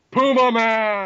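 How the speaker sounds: high, sudden, put-on shout. Retelling a joke from a movie episode: imitating Mike shouting. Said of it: "Mike shouts out".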